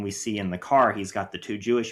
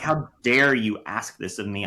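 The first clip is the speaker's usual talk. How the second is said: put-on infuriated voice. Retelling a film scene where a young woman asks for help: imitating infuriated Schindler. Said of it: "this idea infuriates Schindler. He's like".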